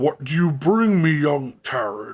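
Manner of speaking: big, loud, booming voice. In a game scene, Amarinth addresses a visitor: booming Amarinth voice. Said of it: "You hear this booming voice".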